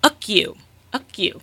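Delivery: mock loud, furious toddler voice, mangled words. Retelling a two-year-old's first words to the speaker during an assessment, imitating an angry child. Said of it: "in an angry voice".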